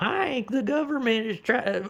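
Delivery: very high, squealing scream. Trying to imitate how a show character talked in later seasons, imitating a character's scream. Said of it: "I like tried to do his scream".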